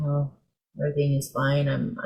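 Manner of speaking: low-energy, flat, level monotone delivery. Example of someone speaking unlike their usual self, in a flat monotone voice. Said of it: "you're speaking in a monotone voice when usually you you don't speak that way".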